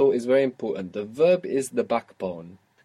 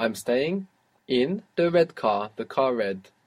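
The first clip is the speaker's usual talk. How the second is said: ordinary talk, nothing marked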